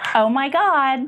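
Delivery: put-on Valley Girl accent and voice. Asked by the host to answer in a valley girl voice. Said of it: "what does a Valley Girl sound like?".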